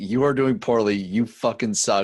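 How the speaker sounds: ordinary delivery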